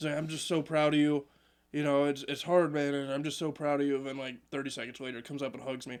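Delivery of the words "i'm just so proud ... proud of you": mock drunk man voice, louder. Retelling how a drunk man at an event praised sobriety: imitating a drunk man. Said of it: "He's hammered as he's doing this".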